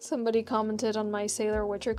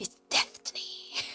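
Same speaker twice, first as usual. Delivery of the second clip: put-on lisping voice. Quoting a line the way Geralt says it: Geralt voice with a lisp. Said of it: "as Geralt would say in the book, 'cause he has a bit of a lisp".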